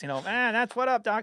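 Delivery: bad, failed attempt at cartoon rabbit voice. Trying out voices in conversation, a bad Bugs Bunny impression. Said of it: "that wasn't a good Bugs Bunny impression".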